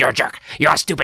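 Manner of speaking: rapid-fire, fast, growling snarl. Describing a voice idea with an example: low growly fast voice. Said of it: "like this low, growly, high pace".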